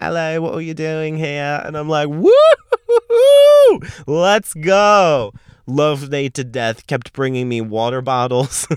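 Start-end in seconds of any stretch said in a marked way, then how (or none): 0.0-1.6 put-on, laid-on British accent. Retelling how Brits greet the speaker at a venue, imitating a British accent. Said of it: "talking to me in their accent".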